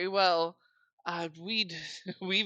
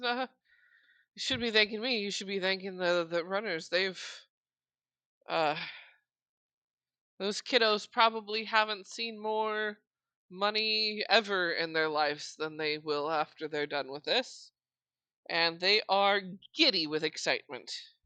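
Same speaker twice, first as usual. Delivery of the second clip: talking through little giggles. Voicing a character who has just been thanked: giggling while speaking. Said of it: "she giggles and goes".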